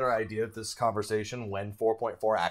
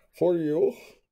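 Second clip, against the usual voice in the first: put-on big-brute voice, pitched up; 7 semitones higher, 4 dB louder than usual. Showing another speaker how the line should sound: Bane voice. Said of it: "that's how you gotta do it".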